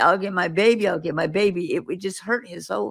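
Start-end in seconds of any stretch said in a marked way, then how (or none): none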